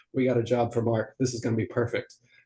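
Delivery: ordinary delivery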